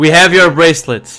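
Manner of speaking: shouting it out loud, called-out announcing tone. In character, telling the others the bracelet is found: shouting out loud. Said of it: "I'm shouting it out loud".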